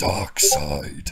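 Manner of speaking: low, slow, drawn-out creature voice. Recapping a Batman movie plot, the speaker attempts a parademon voice. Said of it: "It's hard to do a parademon's voice".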